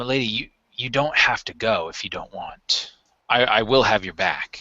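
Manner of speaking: grave, low-pitched voice. A player, in character, squeezes the lady's forearm and speaks: more serious tone. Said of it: "in a somewhat more serious tone".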